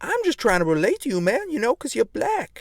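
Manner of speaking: put-on affected American accent. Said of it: "Why are you trying to talk like that?".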